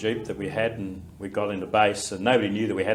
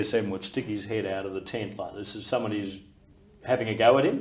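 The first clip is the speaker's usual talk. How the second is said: usual speaking voice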